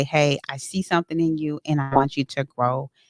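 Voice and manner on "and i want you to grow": normal talking voice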